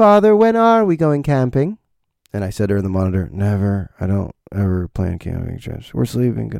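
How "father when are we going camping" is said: put-on refined, elegant, well-spoken, high little-girl voice. Dad retelling being woken by his four-year-old asking about camping, elegant little-girl voice. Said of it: "She has a very elegant voice".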